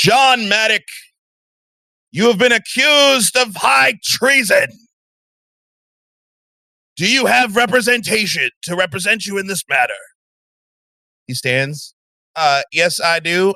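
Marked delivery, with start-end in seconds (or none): 0.0-9.9 booming voice, higher, faster. Storyteller voices someone addressing the accused John Maddock, in a booming voice. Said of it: "you hear a booming voice".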